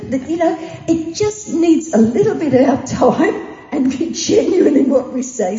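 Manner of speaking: slightly emotional voice. Recalling complimenting a woman's outfit with Merle, getting emotional. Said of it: "Sorry, I get a bit emotional".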